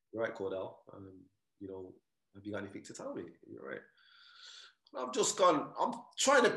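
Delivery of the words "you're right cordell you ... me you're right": calm, soft, composed, even, low-key tone. Recounting finding his mom sitting on the bed, imitating mom's calm tone. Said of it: "in a calm tone".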